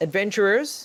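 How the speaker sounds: high, loud calling shout. Game master voicing a woman who spots the players waving, shouting. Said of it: "and then she shouts".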